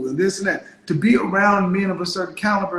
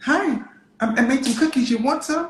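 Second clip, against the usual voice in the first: acted woman's voice, higher pitch; 6 semitones higher than usual. Acting out a woman outside a classroom offering cookies: imitating a woman approaching a man. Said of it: "And then they're standing outside of your classroom".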